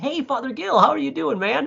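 very high, rough, creaky, fake nice-guy voice. Explaining how he wrote the devil in his movie, shitty nice guy voice. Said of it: "my like nice guy voice, like my shitty nice".

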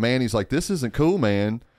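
plain

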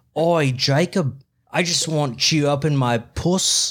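creepy put-on Australian accent. Speaker imagines a creepy australian fan addressing jacob, creepy australian woman voice. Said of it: "a creepy Australian woman to be like".

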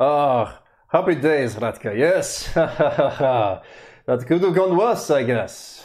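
big booming voice. A game master voicing a Vistani greeting Ratka in camp, big booming voice. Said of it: "you hear this big booming voice from the Vistani".

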